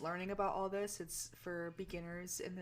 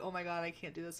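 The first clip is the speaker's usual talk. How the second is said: mock scared, frightened voice. Retelling own words from ghost hunting videos: imitating own scared voice. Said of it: "you'll actually hear in my videos".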